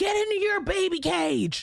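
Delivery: very high, shrieking yell. Acting out greeting the kids' partners at the doorbell: pretend yell. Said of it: "is yell".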